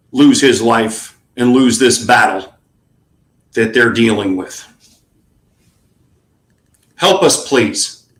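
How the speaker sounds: fired up, passionate anger. Asking viewers to give a dollar to help veterans: fired up and angry. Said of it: "Yes, I'm angry".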